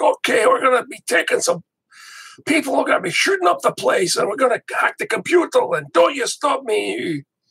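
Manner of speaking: heavy, thick Irish brogue, pitched way up. Retelling what the leader of a team said, thick Irish accent. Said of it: "he had like a thick Irish accent".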